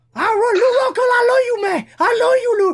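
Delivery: very high, squeaky, little voice. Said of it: "avec la voix que t'as faite".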